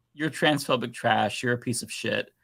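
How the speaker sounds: normal talking voice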